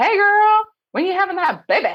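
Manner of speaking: high, loud, bright cheery voice.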